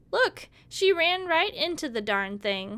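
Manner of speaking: loud, high-pitched jeering yell, like from a crowd. One of the girls yells at a blindfolded girl, yelling. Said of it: "Someone yelled".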